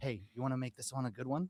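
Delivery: low, close, confiding tone. Acting out what he will say as he walks by on stage: retelling a leaned-in aside. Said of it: "he's gonna kind of like lean in and go".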